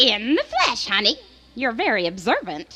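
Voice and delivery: put-on storybook witch voice. Answering whether she is a witch on Halloween: witch voice. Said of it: "are you a witch?".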